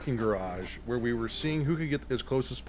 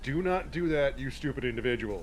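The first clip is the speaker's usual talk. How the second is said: firm, stern dad voice; 3 dB quieter than usual. Retelling being pulled from elevator doors: imitating Squick's daddy voice. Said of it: "got in the Daddy Squick voice".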